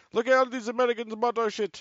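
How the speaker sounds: put-on Arabic-sounding accent.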